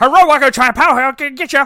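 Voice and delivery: put-on shrill, very loud, heavy broken-English Chinese accent. Speaker imitates a Chinese restaurant worker speaking English, mock accent. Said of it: "what they sound like".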